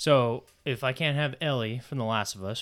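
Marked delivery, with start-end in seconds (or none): none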